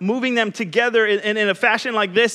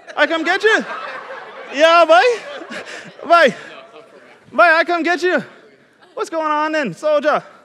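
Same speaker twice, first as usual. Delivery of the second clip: put-on Bahamian accent, local-style speech; 6 semitones higher, 4 dB louder than usual. Showing how people in the Bahamas talk, though you're not from there, use a put-on Bahamian accent. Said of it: "That's how they talk. ... you're not from the Bahamas".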